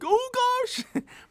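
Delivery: very high, goofy, freaked-out panicked exclamation. Showing the Shaggy voice once considered for the human Jedi: Shaggy voice. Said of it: "even more of a Shaggy voice. Like".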